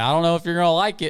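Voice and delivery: high, yelled, called-out line. Retelling a media day exchange, the speaker is retelling own yell back at a man. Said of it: "and I yelled back".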